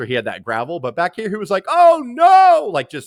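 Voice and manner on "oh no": shrill announcer voice, very high and very loud. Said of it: "upper on this upper level with his voice".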